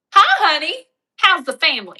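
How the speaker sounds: put-on loud, high call in a Southern accent. Retelling a movie scene about getting an accent back: Reese Witherspoon Southern accent. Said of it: "where did I learn my Southern accent?".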